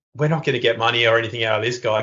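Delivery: ordinary talk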